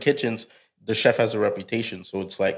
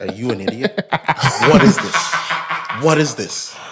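deliberate, slow, raised, cutting, scolding delivery; 3 semitones higher, 5 dB louder than usual. Retelling how a chef whispers in a cook's ear: imitating a whispered insult. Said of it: "he'll come talking to your ear and be like".

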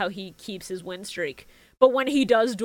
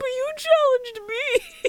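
put-on very high, sobbing child voice, acted out. Retelling a subtitled scene, a kid answering the challenger: imitating a crying kid. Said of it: "the kid just starts crying and going".

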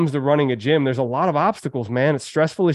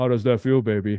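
low, fast, rattled-off, groovy spy-style voice; 4 semitones lower than usual. Pitching a low-priced memo, the speaker slips into an Austin Powers impression. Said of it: "like Austin Powers".

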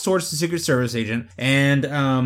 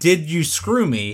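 plain

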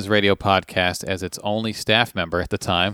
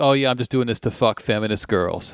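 acted, mock sarcastic tone. Quoting something a man once said online, retelling a sarcastic remark. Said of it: "like sarcastically said that".

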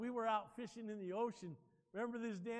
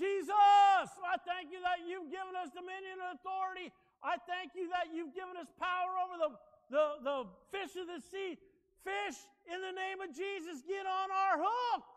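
loud, high, full-throated shout, drawn-out "I"; 9 semitones higher, 8 dB louder than usual. On a boat catching nothing, retelling a friend's loud prayer: imitating Tim shouting. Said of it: "he's always shouting".

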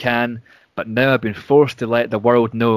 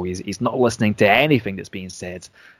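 ordinary delivery

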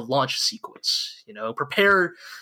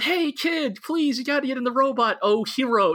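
high, begging, pleading, coaxing voice; 11 semitones higher than usual. Retelling a show scene where Misato urges a kid: imitating Misato's pleading. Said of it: "Misato's out there like".

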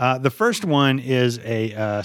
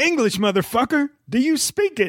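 very high-pitched delivery; 12 semitones higher than usual. Quoting movie lines in a guessing game: Samuel L. Jackson voice. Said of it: "I can't do his voice great".

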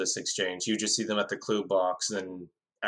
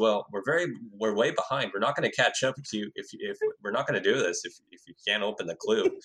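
put-on earnest deadpan, no hint of humor. Retelling what a competitor said to his teammate: imitating Ian's straight-faced delivery. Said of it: "with such a straight face".

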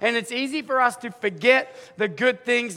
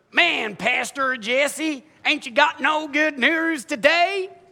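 practiced Iowa accent, laid on thick; 4 semitones higher than usual. Preaching, voicing a listener's complaint to Pastor Jesse in a put-on Iowa accent. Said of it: "I've been practicing my Iowa accent".

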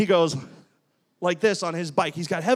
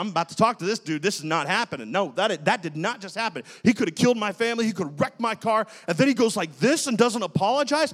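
usual speaking voice

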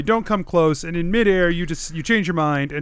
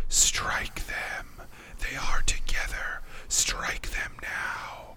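hushed, barely voiced whisper; 3 semitones lower, 9 dB quieter than usual. Voicing an aboleth urging a player to strike the party: aboleth whispering. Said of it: "the aboleth whispers to you".

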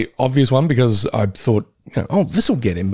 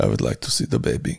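bad, breathy put-on voice; 5 dB quieter than usual. Answering what a director called the baby, bad Werner Herzog impression. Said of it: "I'm doing a bad Werner Herzog".

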